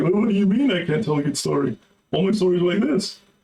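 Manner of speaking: sarcastic mocking voice. Voicing a writer answering his critics: imitating a mocking tone. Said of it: "in a mocking tone".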